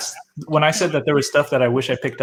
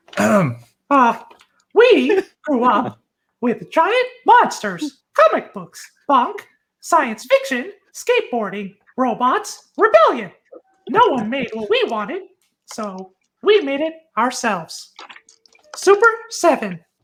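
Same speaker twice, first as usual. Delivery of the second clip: high, squeaky, sing-song voice; 12 semitones higher than usual. Fulfilling a viewer's redeemed request, the speaker reads a passage in a Mickey Mouse voice. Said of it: "whoever redeemed the Mickey Mouse voice, this is for you".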